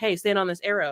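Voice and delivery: normal talking voice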